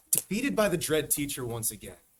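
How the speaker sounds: ordinary delivery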